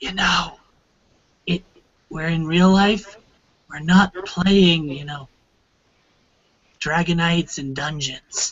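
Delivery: quiet, soft whisper. Voicing a character who sneaks up behind another: whispering. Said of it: "just kinda whispers to him".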